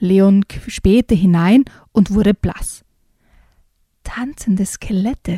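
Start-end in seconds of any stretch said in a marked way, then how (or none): 4.0-5.4 soft, much quieter voice. Leon peers through a half-open door and tells Kevin what he sees, quietly. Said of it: "sagte er leise".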